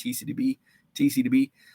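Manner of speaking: put-on said really fast, slurred, sounding drunk.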